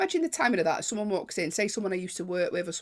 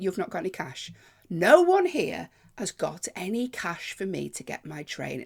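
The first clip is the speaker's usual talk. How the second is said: usual speaking voice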